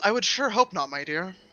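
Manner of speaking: straight-faced, barely audible murmur. Your character is giving someone you call dear a response, deadpan. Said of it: "In a deadpan response".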